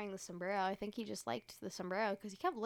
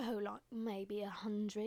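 put-on British accent. Retelling talking to a stranger in a line: put-on British accent. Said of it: "talking in a British accent".

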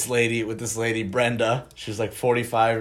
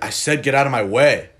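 mock agitated man voice, louder; 3 semitones higher, 7 dB louder than usual. Retelling what a dude said after bumping into Griffin, imitating him agitated. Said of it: "he was like already super agitated".

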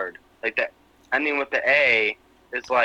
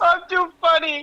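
put-on very high, whiny crying little girl voice. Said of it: "And she starts crying".

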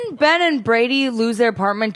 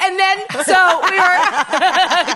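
mock excited shouting, higher; 9 semitones higher, 4 dB louder than usual. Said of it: "whoa, you're shouting".

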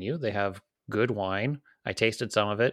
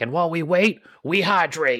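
put-on raised, high-pitched Cajun accent; 7 semitones higher, 6 dB louder than usual. Quoting what he says between things simmering: imitating a Cajun guy. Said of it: "it's this Cajun guy".

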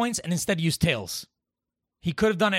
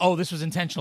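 plain

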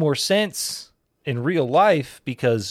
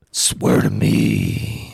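rough, creaky, ground-out voice; 4 dB louder than usual.

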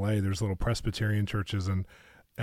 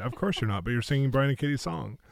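words broken up by laughter while talking; 4 semitones higher than usual. Retelling a reply to a pastor, imitating laughing while talking. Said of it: "laughing, going".

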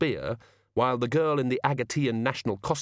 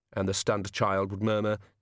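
plain

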